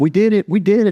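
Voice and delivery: very high, piercing, shrieking scream. Retelling how a shipmate celebrated a promotion: imitating someone screaming. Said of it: "screaming in my face".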